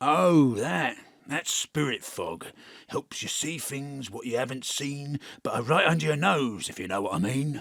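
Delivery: put-on cockney-accented ghost voice, knowing delivery. A ghost answers a question about the thick fog, in a cockney ghost voice. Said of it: "Me, your match-winning rugby ball. / Because I'd be a pretty crap ghost of Cymru present if I couldn't. / And you're a fucking cockney. / All other characters played by [name]".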